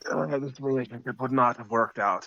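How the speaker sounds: whispered voice. In a roleplaying game, a character comments via Psychic Whisper, whispering. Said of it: "I say that in Psychic Whisper".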